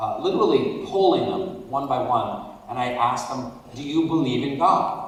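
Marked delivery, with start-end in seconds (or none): none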